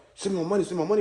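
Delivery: put-on pushy, adamant, insistent tone. Retelling how the other person kept demanding: imitating someone being adamant. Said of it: "he was so, like, adamant about".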